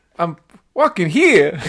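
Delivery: high, loud blended character voice, belted out. Practising a new accent blending Kermit and Christopher Walken. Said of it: "Kermit and Christopher Walken".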